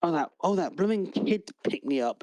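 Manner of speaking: furious, angry fairy voice. Voicing a fairy locked in a lantern, answering a player: angry fairy voice. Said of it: "a very angry, uh, fairy in it".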